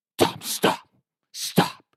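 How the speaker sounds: soft, hushed whisper under the breath. Retelling a friend's warning at the bar: imitating Mo whispering. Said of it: "He's whispering it while I'm talking".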